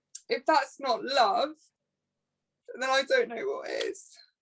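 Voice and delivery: choked-up, tearful, crying happy tears mid-sentence. Speaker talks about a man who stayed up all night watching over them: crying happy tears. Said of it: "I'm crying because I'm happy".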